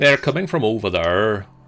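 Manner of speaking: attempted Scottish accent. Voicing a big giant character while playing a game, scottish accent. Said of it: "he's a Sc- Scottish accent".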